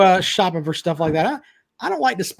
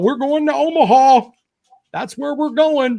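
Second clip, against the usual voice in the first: cocky, overhyped, boastful, pitched-up bragging; 7 semitones higher, 3 dB louder than usual. Imitating Alabama fans after three early wins: imitating a boastful Alabama fan. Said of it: "they'll be talking about".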